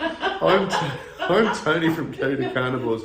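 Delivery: giggling while talking.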